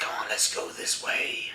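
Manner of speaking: whispered, breathy, hushed put-on tough-guy voice. Talking with a friend about a man's YouTube voice, the speaker imitates his put-on voice. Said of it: "that wasn't his normal voice when he was like".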